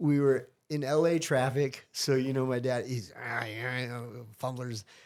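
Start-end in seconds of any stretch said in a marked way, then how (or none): 3.2-4.8 put-on angry grumbling, quieter. Retelling how dad reacted while stuck in traffic: imitating an angry dad. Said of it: "He was so mad and angry".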